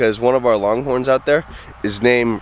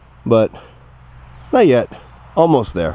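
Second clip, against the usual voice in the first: ordinary talk, nothing marked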